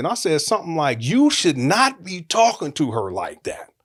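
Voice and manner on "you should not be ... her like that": ordinary talk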